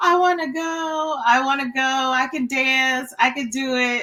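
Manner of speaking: mock tearful, high-pitched, drawn-out crying voice. Retelling begging sisters to go to the disco: imitating own childhood crying. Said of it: "I would just be, like, crying".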